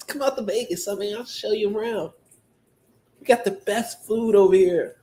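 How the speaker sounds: small, high little voice. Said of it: "His little ass voice".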